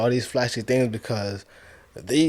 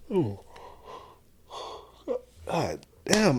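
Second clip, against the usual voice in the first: breathy words yawned out mid-yawn; 6 semitones higher, 5 dB quieter than usual. Complaining about buying designer clothes, interrupted by a yawn, yawning. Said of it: "I gotta stop yawning".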